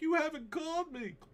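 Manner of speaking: very high, tearful crying wail. Describing a girlfriend who calls back later: imitating someone crying. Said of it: "she calls you crying".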